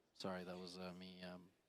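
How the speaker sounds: ordinary delivery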